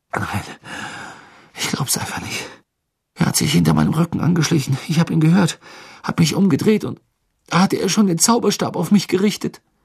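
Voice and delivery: breathless, gasping, panting, rushed and high. Asked if he is hurt, he explains the attack from behind, panting. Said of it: "keuchte Cedric".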